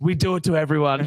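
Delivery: yelling. Retelling calling out an apology to the ref in a car park: retelling a yell. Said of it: "I just yelled out".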